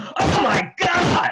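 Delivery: sudden, very high, loud exclamation. Retelling hearing someone exclaim at the next table: imitating a loud shout. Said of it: "really, really loud".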